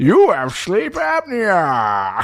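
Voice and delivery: very slow, swooping villain voice, "apnea" stretched out. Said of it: "it sounded like Bane".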